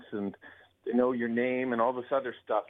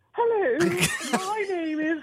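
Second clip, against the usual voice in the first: put-on British accent, pitched very high. Switching just back to british again after other voices: british accent. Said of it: "just back to British again".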